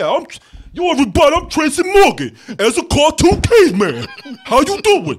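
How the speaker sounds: easygoing, slow, swooping sing-song put-on voice. Mocking how the new caveman should introduce himself: Tracy Morgan voice. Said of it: "that's what he should have said".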